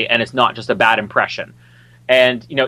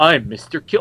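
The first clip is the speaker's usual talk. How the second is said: put-on lisp, higher pitch and slower pace; 3 semitones higher than usual. Mocking a movie tough guy's one line, Mr. Kill lisp impression. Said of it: "he says it with a lisp".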